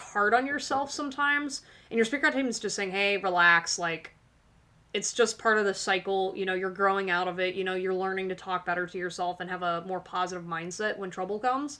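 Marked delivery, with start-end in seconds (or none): none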